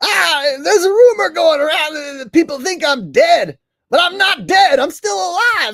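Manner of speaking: shrieking high and loud. Retelling a comedian's recent performance: Bobcat Goldthwait impression. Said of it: "his most recent comedy performance and he was like".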